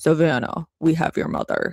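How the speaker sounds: put-on old-school altered, disguised voice-changer voiceover sound. Imitating an old-school voice-changer voiceover: disguised voice-changer voice. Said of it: "those old school voiceover, like the voice changing".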